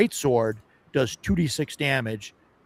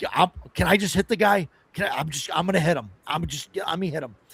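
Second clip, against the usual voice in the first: mock impatient, shaky voice, higher; 4 semitones higher than usual. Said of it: "be shaking".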